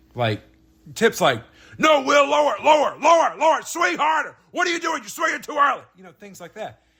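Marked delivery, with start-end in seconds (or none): 1.7-5.8 loud high-pitched shouting. Retelling batting cage practice with the guy correcting him: imitating Tip yelling. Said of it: "the same guy that's been yelling at me".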